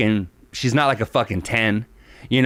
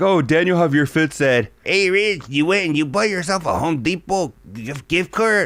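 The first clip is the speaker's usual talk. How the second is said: imitated broken English, barely speaking English; 4 semitones higher than usual. Retelling how his buddies imitate him, sounding like he barely knows English. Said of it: "sound like I barely know English".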